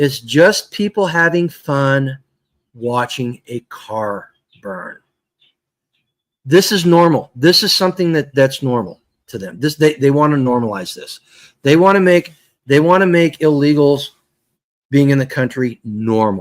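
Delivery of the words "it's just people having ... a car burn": very slow, deliberate, each word weighed. Speaker repeats a point so it sinks in, said really slow. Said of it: "I'm going to say it really slow so it sinks in".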